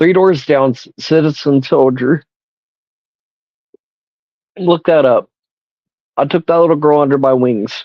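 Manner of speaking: high, tearful voice near breaking, held together. Recounting taking a little girl under her wings, holding back tears. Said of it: "I'm trying not to break down".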